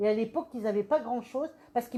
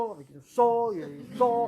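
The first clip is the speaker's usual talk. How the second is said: much lower, deep booming voice. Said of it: "quelqu'un qui parle comme ça".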